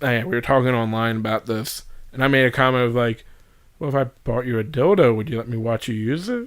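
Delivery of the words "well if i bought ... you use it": usual speaking voice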